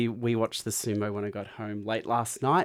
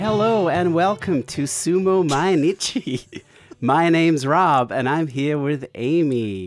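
loud, very slow put-on American accent; 4 semitones higher, 8 dB louder than usual. Opening the podcast while pretending to be Rob: put-on American accent. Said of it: "He can do an American accent after all".

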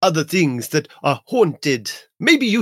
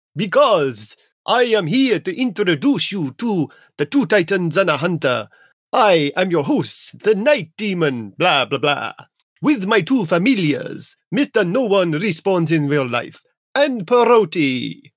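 fake, hammy, cheesy Romanian vampire accent with rolled r. Doing the show intro as the host: bad Romanian accent as Night Demon. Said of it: "Why are you doing a bad Romanian accent?".

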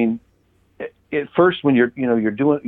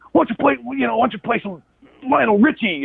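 mock yelling, much higher and slower; 3 semitones higher than usual. Retelling callers complaining about the music he played, imitating callers yelling. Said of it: "these guys are yelling at me".

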